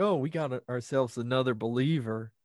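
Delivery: fake Southern accent. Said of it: "in their kind of really bad Southern accents".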